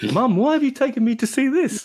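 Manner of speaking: put-on very high, awkward, uncomfortable teenage voice. Acting out a teenage son taken to see Mapplethorpe: imitating an uncomfortable teenage son. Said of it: "He was slightly uncomfortable".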